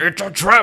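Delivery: put-on alien commander voice. Comparing the voice to Admiral Ackbar's line: Admiral Ackbar impression. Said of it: "if you listen to".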